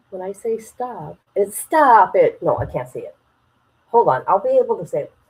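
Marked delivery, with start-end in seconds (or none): 1.5-2.4 attempted put-on Boston accent, louder. Demonstrating how people in Boston say it, with an attempted Boston accent. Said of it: "talk in an accent of people in Boston".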